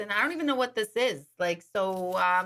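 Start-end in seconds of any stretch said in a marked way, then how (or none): 0.1-1.2 put-on Brooklyn accent, put on. Retelling a listener's wife reacting to a gift, imitating a Brooklyn accent. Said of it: "She's got that Brooklyn accent".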